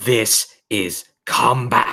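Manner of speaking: vicious, snarling monster voice. Narrating a fight, voicing a Venza that lunges at Solara, snarling. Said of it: "one of the Venzas snarls like".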